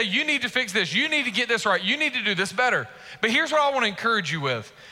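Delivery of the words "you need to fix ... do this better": ordinary talk, nothing marked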